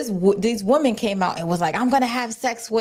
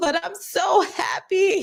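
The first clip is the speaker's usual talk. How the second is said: put-on, very slow, high, drawn-out tearful sobbing; 8 semitones higher than usual. Retelling a woman's words after a test run: imitating someone crying. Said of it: "and she just starts crying".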